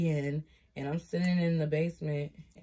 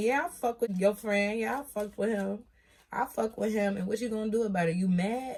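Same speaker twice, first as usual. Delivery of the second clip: put-on drunken, goading, defiant taunting rant; 4 semitones higher than usual. Speaker retells what they said while drunk, retelling going off. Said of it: "I was going off".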